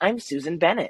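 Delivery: put-on sweet little old lady voice. Retelling the videos done as a character: Susan Bennett sweet old lady voice. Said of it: "sweet little old lady".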